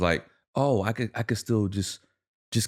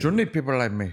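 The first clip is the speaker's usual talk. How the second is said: choppy fake Cuban accent, much higher pitch; 4 semitones higher than usual. Quoting a movie character in a restaurant scene, choppy fake Cuban accent. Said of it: "that Cuban choppy accent".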